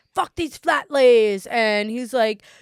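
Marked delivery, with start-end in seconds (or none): 0.2-1.5 put-on British accent, higher and louder. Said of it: "this guy with a British accent".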